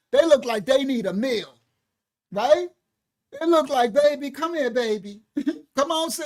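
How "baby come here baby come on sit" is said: put-on elderly grandmother voice.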